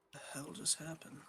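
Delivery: soft mumbled mutter to himself, half aside. A character fidgets with a paper's corners, muttering to himself. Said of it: "sitting there like muttering like".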